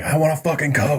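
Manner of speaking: mock-furious, high, angry shouting. Retelling yelling at mom while on painkillers: imitating own past yelling. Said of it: "yelling at my mom".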